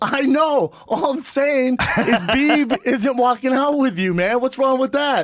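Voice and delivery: very high talk, words broken by laughter. Retelling own reply to Floyd, laughing while talking. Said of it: "I start laughing".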